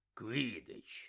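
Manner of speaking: low, very quiet, grumbled mutter under the breath. Uncle Vernon rereads a letter and repeats one word: barely audible mutter. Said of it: "ледь чутно буркнув він".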